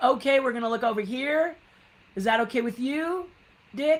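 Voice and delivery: put-on loud voice. Retelling directing someone which camera to look at: retelling own big voice. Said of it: "me and my big voice would say".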